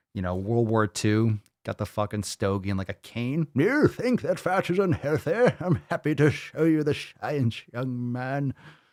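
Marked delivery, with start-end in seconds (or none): 3.6-8.6 put-on old British man's voice and accent. Voicing an old British guy with a stogie and cane, put-on old British accent. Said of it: "Like one of these old British guys".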